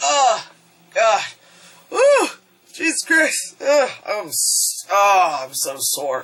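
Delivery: sore groaning, slow, with swooping pitch. Retelling a movie scene, voicing a sore Godzilla getting up. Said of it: "Godzilla, like, gets up and is like".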